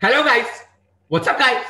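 over-excited exclaiming. Showing how a greeting should sound with an exclamation mark: exclamatory, full of expression. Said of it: "It's exclamation, bro".

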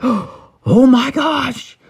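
thrilled, excited cry, very high-pitched. Retelling the reaction to presents next morning: imitating Harper excited. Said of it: "And you were so excited".

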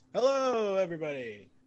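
exaggerated nasal radio announcer.

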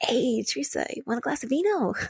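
mock genial, sweet, friendly voice. Retelling how the dad from a host family offered wine: imitating a really sweet offer. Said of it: "just really sweet".

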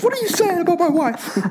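play-acted defensive retort, pitched very high. Recapping a scene, voicing Eugene getting all defensive. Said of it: "Gets all defensive".

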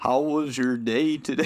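put-on American accent, slow and deliberate. Scouse speaker asked to say a line in american: american accent. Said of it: "What do you want me to say in American?".

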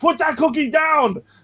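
very high, hard, forceful scream. Recalling a movie scene, the speaker quotes a line as a screaming Arnold impression. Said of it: "having Arnold screaming".

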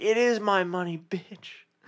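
loud, high-pitched yelling. Retelling a friend's reply to the vendor: imitating a friend yelling. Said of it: "Joel was yelling at this lady".

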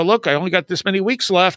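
plain

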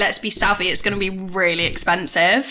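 ordinary talk, nothing marked

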